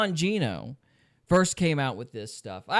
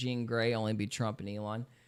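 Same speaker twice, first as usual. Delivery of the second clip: usual speaking voice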